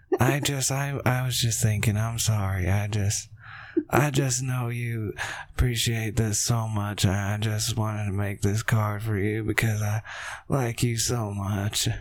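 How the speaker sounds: put-on soft-guy voice. Showing how he acts in all the movies, do an impression of him being a soft guy. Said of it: "that's my impression of every time he tries to be a soft guy".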